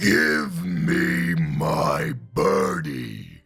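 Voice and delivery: very low, rough, booming giant rumble. A storyteller reading a story aloud voices the giant in a booming giant voice. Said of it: "I need to do a giant voice like that".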